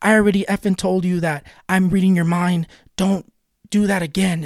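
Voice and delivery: really mad, fed-up, exasperated scolding. Retelling what he said after slamming his hand on the table, an angry yell. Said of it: "he gets like really mad and he's like yelling at me".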